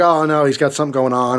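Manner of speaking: ordinary talk, nothing marked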